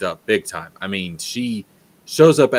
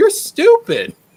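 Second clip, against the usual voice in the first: put-on high, loud prepubescent boy voice, pitched way up; 5 dB louder than usual. Retelling the hero's reply to the villain's monologue in a game: prepubescent Haley Joel Osment voice. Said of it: "in his prepubescent Haley Joel Osment voice says".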